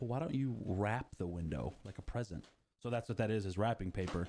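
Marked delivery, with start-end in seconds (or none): none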